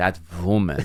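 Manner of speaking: play-acted, spiteful, seething, aggressive, insulting emphasis. Imitating how the dad aggressively says woman: imitating an aggressive "woman". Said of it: "He says women, woman so aggressively".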